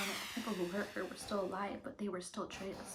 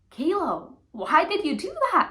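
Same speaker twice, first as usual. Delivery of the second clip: very loud, high, swooping, scolding yell; 9 semitones higher, 15 dB louder than usual. Retelling how mom found the sister in baby powder: imitating mom yelling. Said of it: "my mom yelling at her".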